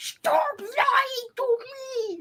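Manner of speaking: put-on very high, drawn-out kid voice. Mocking an actor's attempt to raise his voice in a scene: imitating someone raising his voice like a little kid. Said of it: "when he tries to raise his voice".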